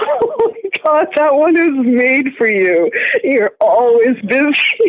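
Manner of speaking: talking through laughter. Teasing the other speaker about always being busy, laughing while talking. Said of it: "You're laughing too much".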